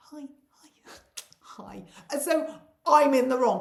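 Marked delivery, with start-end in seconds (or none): 0.0-1.8 very hushed, polite, whispered English murmur. Stuck behind a woman's trolley blocking the doors, retelling a very English 'hi'. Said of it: "that very English thing".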